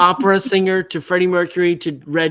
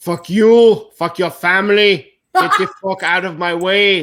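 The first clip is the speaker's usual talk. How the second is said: put-on Austrian action-hero accent. Playing an accent game, reading the given phrase: Arnold Schwarzenegger accent. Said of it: "Arnold, Arnold Schwarzenegger".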